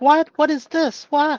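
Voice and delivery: put-on sarcastic mocking. Retelling how mom makes fun of things: imitating mom's sarcastic mockery. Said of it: "make sarcastic".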